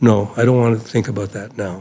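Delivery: even, composed voice. Recalling what an eighteen-year-old said when urged to plan ahead, retelling a calm reply. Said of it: "he just said very calmly".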